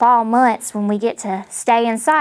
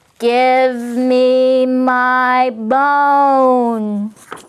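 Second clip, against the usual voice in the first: put-on teeny tiny voice, slightly raised in volume; 2 semitones higher, 3 dB louder than usual. Reading a story aloud, the voice from the cupboard speaks: teeny tiny voice, a bit louder. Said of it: "the teeny tiny voice said from the teeny tiny cupboard, a teeny bit louder".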